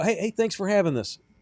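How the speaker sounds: acted mock-smug, obnoxious tone. Retelling what he said to a woman about his name: retelling in a dickish tone. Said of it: "I didn't do it in a dickish tone".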